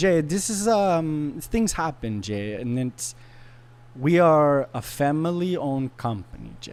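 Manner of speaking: slow, very bad put-on Italian accent. Retelling what she said to him, in a bad Italian accent. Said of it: "I'm going to do the worst Italian accent".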